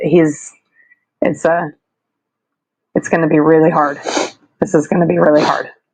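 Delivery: breaking up, halting voice, holding back tears. Speaking about someone who will stay in their hearts forever, holding back tears. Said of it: "I'm really trying not to cry".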